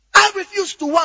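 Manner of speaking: loud shouting at a very high pitch. Showing how to shout scripture aloud alone in your room: shouting scripture. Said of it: "You are shouting it out now".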